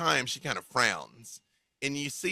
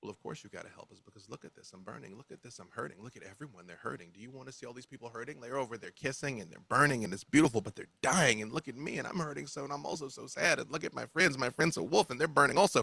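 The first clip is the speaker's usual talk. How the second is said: quickened, run-on speech, a little faster. Voicing a burning, hurting figure pleading for help: talking a little faster. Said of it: "You almost start talking, like, a little faster".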